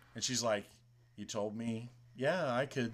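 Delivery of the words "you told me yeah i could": soft, perfectly calm voice. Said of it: "she's super calm".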